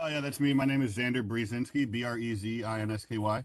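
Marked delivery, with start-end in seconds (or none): 1.9-3.4 hurried letter-by-letter spelling. Giving his last name when called on, spelling it too fast. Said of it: "that was too fast".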